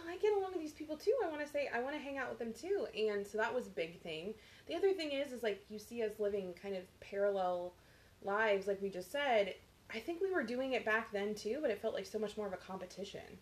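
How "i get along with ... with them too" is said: insecure, high, fast, eager pleading tone. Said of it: "I was like".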